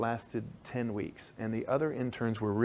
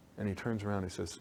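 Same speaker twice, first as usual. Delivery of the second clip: ordinary talk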